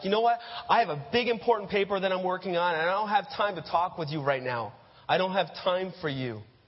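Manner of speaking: curt, snapping, snapped-back tone. Acting out a big brother answering his little sister: snapping back. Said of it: "you snap back".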